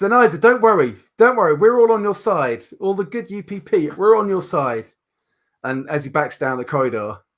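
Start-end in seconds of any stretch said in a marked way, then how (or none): 0.0-4.8 high-pitched hollered shout, carrying far. Voicing a character backing away down a corridor: shouting. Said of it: "he shouts".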